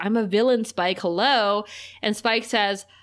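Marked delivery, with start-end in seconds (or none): none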